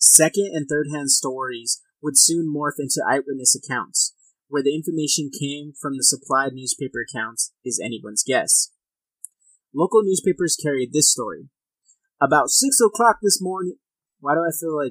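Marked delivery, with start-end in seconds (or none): 12.2-13.8 attempted, put-on Southern bayou country accent. Reading a local newspaper account aloud, the speaker tries an accent; Waterboy accent. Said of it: "It sounded like the water boy".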